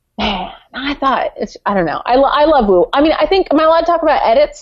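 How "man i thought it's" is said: put-on whisper, quieter. Imitating Wu leaning forward in a confessional: imitating Wu's whisper. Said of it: "he kind of whispers in all of his confessionals".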